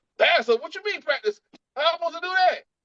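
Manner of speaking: very high, bewildered, confused voice. Acting out church members answering the Lord: imitating church members. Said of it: "And they're like".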